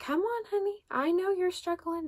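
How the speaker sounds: put-on very high, funny little Southern accent. Retelling what Rebecca said on arriving: Rebecca's funny little Southern accent. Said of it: "she has this funny little Southern accent".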